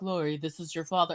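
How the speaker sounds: very deep, very quiet fatherly voice. Recalling every voice message their father left, the speaker quotes him: imitating father's voicemail greeting. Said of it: "every voice message he ever left".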